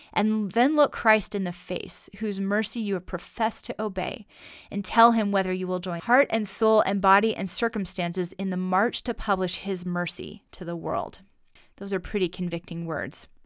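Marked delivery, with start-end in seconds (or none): none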